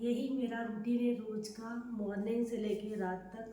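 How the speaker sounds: very soft, hushed speech.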